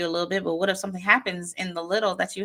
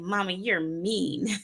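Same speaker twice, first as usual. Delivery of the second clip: put-on angry, cross child voice; 4 dB quieter than usual. A mother retells her child's reply after she shouted at him: imitating a mad child. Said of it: "he got mad and he was like".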